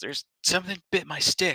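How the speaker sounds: very high, loud voice, fighting back tears. A game master voices Kilt showing his bitten stick, on the verge of tears. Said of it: "trying really, really hard not to cry".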